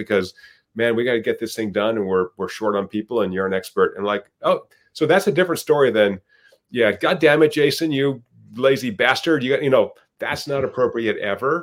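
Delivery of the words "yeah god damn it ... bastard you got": furious, angry yelling. Contrasting two ways a boss might ask jason for help: mock yelling at an employee. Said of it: "And like yelling at people".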